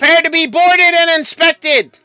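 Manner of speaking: very high, booming, commanding shout. A battleship hails your ship sailing through the strait, a booming shout. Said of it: "follows with a booming voice of".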